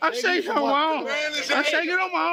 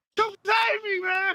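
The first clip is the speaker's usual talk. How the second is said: loud yelling and shouting, pitched higher; 4 semitones higher than usual. Answering someone who tries to check on him: yelling. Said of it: "Why you yelling at me?".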